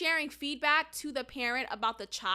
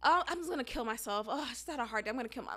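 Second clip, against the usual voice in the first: mock-flippant offhand tone, quieter and faster; 4 dB quieter than usual. A teacher retelling what her student would say, imitating a flippant remark. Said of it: "she would like flippantly say".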